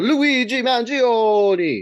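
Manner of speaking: Italian accent, spoken high. Describing a timeline, saying the name Luigi Mangione in Italian accent. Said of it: "my Italiano accent".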